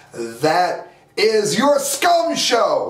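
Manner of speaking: seething, furious, angry delivery. Denouncing someone's show at the end of a rant: furious. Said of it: "I am furious".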